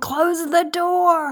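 high, slow mock scream.

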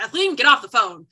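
booming, loud, fast growled delivery. Retelling dad speaking to Kathleen on the phone during a kitchen argument, imitating dad's Stabler growl. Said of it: "dad in his Stabler growl is like".

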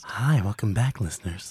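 playfully suggestive put-on voice, loud and slightly sexual. Greeting the listeners after a break: slightly sexual put-on voice. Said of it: "slightly sexual noise kind of voice".

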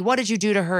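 ordinary talk

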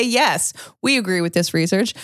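plain

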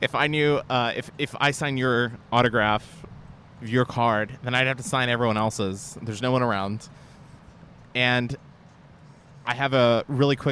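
ordinary delivery

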